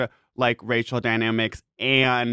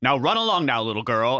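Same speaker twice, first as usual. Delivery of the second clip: acted, mock-dismissive brush-off tone. Telling a story, the speaker quotes a man brushing off a girl, imitating a dismissive man. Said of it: "and it's like really dismissive".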